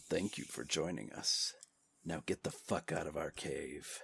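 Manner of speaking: deep, hushed, very soft, sultry, sexy purr. Retaking a sign-off after stopping to stop smiling, in a deep, sexy voice. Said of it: "I'll do it in a deep, sexy voice".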